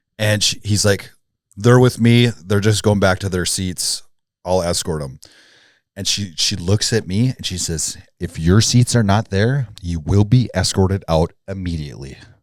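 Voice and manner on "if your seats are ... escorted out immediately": put-on dead-serious, almost angry tone. Retelling how a woman warned the group, imitating a dead-serious warning. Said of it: "she's like dead serious, like almost pissed".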